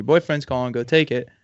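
ordinary delivery

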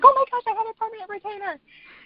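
put-on very high, panicked, rushed, rattled-off words. Retelling telling the anesthesiologist about a metal retainer: imitating own terrified words. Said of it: "but I was so terrified".

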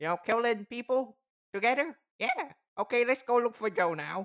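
goblin voice, Mississippi-sounding. Voicing a goblin while narrating the story, goblin voice with Mississippi accent. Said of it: "What the fuck is that goblin voice?".

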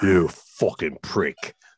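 deep Cockney film-star voice. Quoting an actor's line from the end of a film scene, Michael Caine Cockney accent. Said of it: "used his actual Cockney accent".

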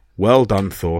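ordinary delivery

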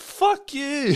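high-pitched laughing curse.

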